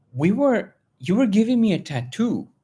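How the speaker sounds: very high-pitched, excited, blurted out. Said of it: "She goes".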